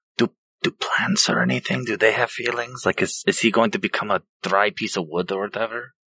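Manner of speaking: speaking really quietly, hushed. Asking the group a quick question in the scene: speaking really quietly. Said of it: "I'm trying to say this really quietly".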